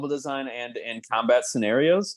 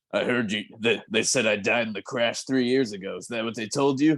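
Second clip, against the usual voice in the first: hard, gruff, rough-edged growl of a voice; 2 semitones lower than usual. Complaining about a character's new voice, the speaker shows how it should sound: gruff Krauser voice. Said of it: "his voice is supposed to be like more gruff".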